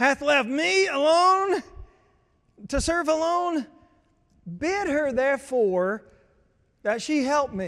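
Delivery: high, stressed, frustrated, drawn-out voice. Acting out a frustrated woman's complaint to the Lord about her sister, frustrated, an octave higher. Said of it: "Can you feel the stress in the words?".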